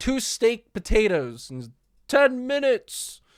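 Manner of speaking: very high, drawn-out yelling. Voicing a barmaid calling out a food order: barmaid yelling back. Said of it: "the barmaid yells back".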